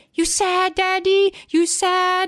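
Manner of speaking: put-on very high, very slow tiny toddler voice. Retelling a funny video where a little boy asks his laughing dad: imitating a toddler. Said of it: "the little boy is like".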